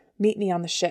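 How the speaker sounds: ordinary delivery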